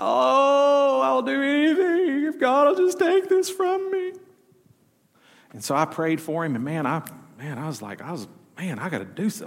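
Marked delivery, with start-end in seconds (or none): 0.0-4.1 put-on very high sobbing voice with drawn-out "oh". A pastor retells a crying man in his office pleading: imitating someone sobbing.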